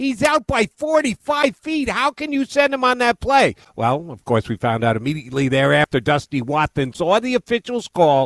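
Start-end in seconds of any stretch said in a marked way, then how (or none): 0.0-3.6 mock yelling, higher pitch. Retelling a reaction to a baseball play: imitating screaming at the tv. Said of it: "I was screaming at my T V".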